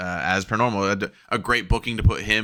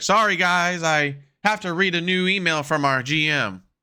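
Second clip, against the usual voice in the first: higher-pitched put-on ringside announcer voice; 9 semitones higher than usual. Retelling the announcer reading an email mid-match: Michael Cole impression. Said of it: "Michael Cole would be like".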